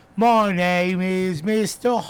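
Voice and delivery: bad put-on British accent. Mocking an actor's bad British accent from a movie: imitating Keanu Reeves's bad British accent. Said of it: "he couldn't do a British accent".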